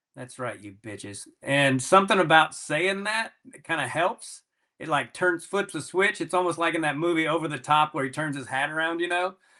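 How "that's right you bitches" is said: low, very quiet, under-the-breath mutter. Describing what he says when his name is called, muttered under breath. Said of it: "When they say my name under my breath".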